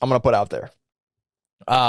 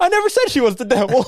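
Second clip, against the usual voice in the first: high, loud, blurted-out panic. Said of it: "he's, like, panicking".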